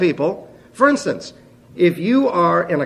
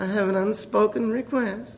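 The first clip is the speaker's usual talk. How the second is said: small, soft, sweet little voice; 3 semitones higher, 8 dB quieter than usual. Speaker recounting someone voicing a prayer request, imitating a sweet little voice. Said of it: "this sweet little voice say".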